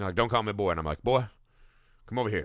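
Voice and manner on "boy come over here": attempted Texan accent. Retelling calling people over outside the screening, trying to talk like a Texan. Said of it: "you're trying to talk like a Texan".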